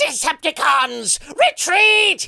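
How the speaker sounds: very high, very loud screech. Describing the original Generation One voice, doing the original Starscream voice. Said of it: "He was very screechy and and high up there".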